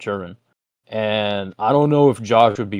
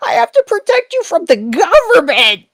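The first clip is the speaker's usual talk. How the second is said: put-on melty crackly ranting voice, higher and louder; 9 dB louder than usual. Imagining a parent losing patience at his child: imitating Josh's melty crackly outburst. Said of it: "melty, crackly voice fucking spurgouts".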